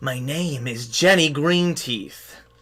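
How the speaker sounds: witchy hag character voice. Voicing a hag who refuses to drop her illusion: Jenny Greenteeth voice. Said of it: "she says".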